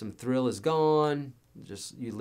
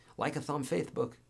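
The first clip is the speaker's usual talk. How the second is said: put-on lisp, quieter; 3 semitones higher, 5 dB quieter than usual. Retelling what a bandmate with a lisp said on stage: imitating Scott's lisp. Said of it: "a lisp".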